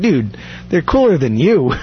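ordinary talk

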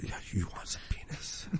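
pretend ghostly whispering. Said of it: "it's just whisper in my ear".

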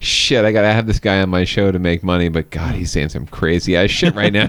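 ordinary delivery

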